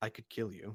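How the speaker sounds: very quiet, hushed, soft-spoken voice. Voicing a character speaking to a player's character, quietly. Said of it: "she'll just quietly say".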